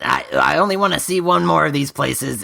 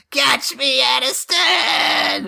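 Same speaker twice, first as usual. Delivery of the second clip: very high, shouted, carrying yell; 12 semitones higher than usual. Falling through the air, calling to a character below: yelling down from above. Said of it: "me yelling down to Aniston".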